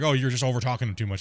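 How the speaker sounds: ordinary talk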